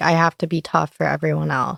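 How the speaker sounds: plain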